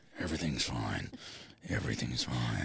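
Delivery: very deep, low-pitched big-villain voice. Answering someone mid-argument, in a voice like Thanos. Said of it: "you sound like the guy from Marvel. The big purple one".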